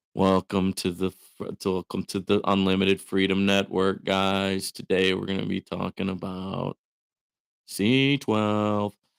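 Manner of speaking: dull, flat, droning one-note monotone. Showing how a monotone speaker sounds opening a welcome, flat monotone voice. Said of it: "talks like this all the time, has a monotone voice".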